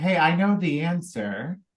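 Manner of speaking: ordinary talk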